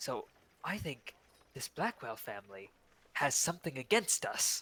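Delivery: hushed whisper. Speaking in character as an aside to another player: whispering. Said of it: "John is whispering".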